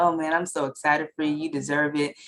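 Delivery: ordinary delivery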